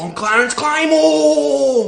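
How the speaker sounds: loud, bold, from the chest, full conviction. Repeating a line after being told: said with your chest. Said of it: "Say it with your fucking chest".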